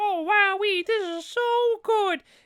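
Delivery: very high-pitched and drawn out. Describing the reporter guy from a movie, doing a Mickey Mouse voice. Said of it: "Why is he Mickey Mouse?".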